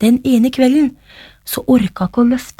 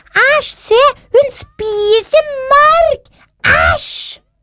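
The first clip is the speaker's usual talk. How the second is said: crowd's disgusted outcry, very high, very slow; 13 semitones higher than usual. Narrator voicing the audience as the girl eats worms, shouting in disgust. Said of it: "ropte publikum".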